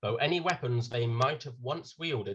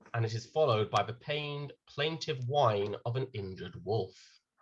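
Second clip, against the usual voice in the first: normal talking voice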